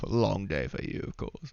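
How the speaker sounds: scoffing with a chuckle. Voicing a character who scoffs at another: chuckling under his breath, scoffing. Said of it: "chuckles under his breath".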